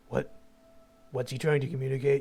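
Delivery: whispering in a character voice. Voicing a character leaning down to ask Grace quietly: whispering in character. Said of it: "tries to whisper at Grace".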